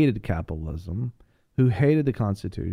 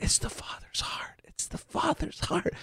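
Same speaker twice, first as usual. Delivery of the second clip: soft breathy whisper, barely voiced, very quiet; 10 dB quieter than usual. Retelling what a guy said while the speaker leaned forward, whispering. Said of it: "he's whispering".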